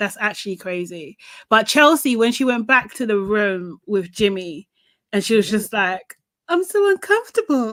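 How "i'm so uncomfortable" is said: weird, odd, very high changed voice. Retelling what a cast member said to Jimmy: imitating her weird voice. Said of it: "She done this weird voice".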